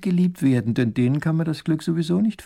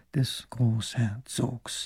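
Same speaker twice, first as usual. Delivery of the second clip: murmured under breath, quieter; 5 semitones lower, 9 dB quieter than usual. Reading a story aloud, voice the scribe as he writes, murmuring. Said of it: "murmelt er dazu".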